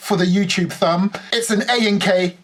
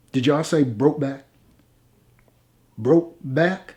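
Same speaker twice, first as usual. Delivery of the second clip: silly, deep, ridiculous put-on cowboy American accent; 5 semitones lower than usual. As the new sheriff in a video intro, ridiculous fake American accent. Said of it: "putting on the most ridiculous fake American accent".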